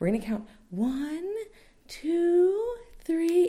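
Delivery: very high, sweet, soothing therapist voice. Recalling a nurse counting aloud, imitating a nurse's therapy voice. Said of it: "she has this very therapy voice".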